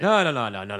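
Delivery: put-on slurred Irish accent. Acting out Gabriel Byrne turning down a night out: Gabriel Byrne impression, slurry Irish accent. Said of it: "a really slurry Irish accent".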